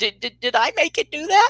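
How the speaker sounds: high, trembling, quaking voice breaking and cracking. Retelling a woman's frightened question under a strange thing overhead; imitating a quaking voice. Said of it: "her voice quakes".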